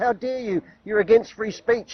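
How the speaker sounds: put-on woman's voice yelling. Retelling what a woman said in an argument: imitating her yelling. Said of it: "she was yelling at me".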